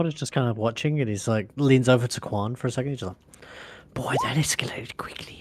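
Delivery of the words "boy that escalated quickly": hushed whisper under the breath. A character leans over to another character for a second, whispered. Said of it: "you whispered it too quiet".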